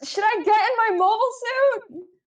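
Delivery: loud, high-pitched shout, calling out. Player voicing Patch, who leans over again to shout: shouting as Patch. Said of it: "he like leans over again to shout".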